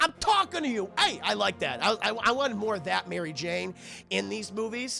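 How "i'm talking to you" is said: put-on pitched-up, light New York accent. Quoting Kristen Dunst's line as Mary Jane in the movies, Kristen Dunst's New York accent. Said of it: "got a little New Yorker in her chat".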